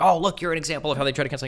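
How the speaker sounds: high, worked-up, excited yelling and screaming. Complaining about being used as an example, the speaker mimics someone screaming at them. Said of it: "he's like screaming at me like".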